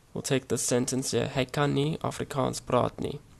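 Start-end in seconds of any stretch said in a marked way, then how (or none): none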